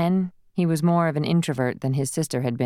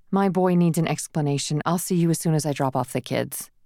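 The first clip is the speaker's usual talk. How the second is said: plain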